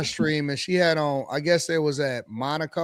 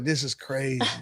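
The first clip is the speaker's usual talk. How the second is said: put-on drunk voice, lower and quieter; 4 semitones lower, 6 dB quieter than usual. Retelling how Quentin talks when drunk at meetups: imitating drunk Quentin. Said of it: "He be like".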